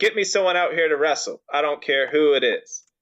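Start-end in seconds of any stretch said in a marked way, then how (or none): none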